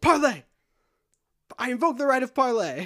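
loud, high yell. Retelling a scene where a woman about to be shot yells: retelling a character's yell. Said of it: "she just yells".

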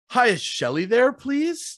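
polite tone, upward inflection on please. Phone call asking for someone, upward inflection on please. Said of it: "there's this upward inflection that we have in our voice".

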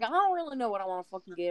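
put-on Southern accent. Quoting a woman rambling at the fridge, in a put-on southern accent. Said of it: "talking in a Southern accent".

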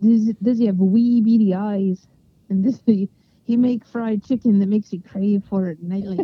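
bad, shaky, best-effort put-on Scottish accent. Quoting a line, doing a Scottish accent from So I Married an Axe Murderer. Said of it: "I'm supposed to be Scottish".

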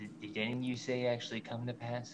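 ordinary talk, nothing marked

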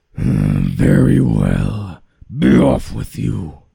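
loud, gruff, rough troll voice. Narrating the billy goats Gruff story as the troll lets a goat go, troll voice. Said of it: "said the troll".

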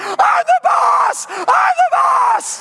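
acted very high, very slow, climbing child's scream. A father retells his limp son screaming in the mall, imitating a screaming kid. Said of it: "he's screaming".

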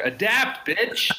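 very high, punchy, blunt hype-guru preacher delivery. Answering how to stay relevant, doing a Gary Vee impression. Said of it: "my best Gary Vee impression".

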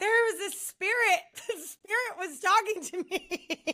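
play-acted, high words pushed out through sobs. Recalling the answer to his question after hearing his voice, imitating sobbing speech. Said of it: "And I just start sobbing".

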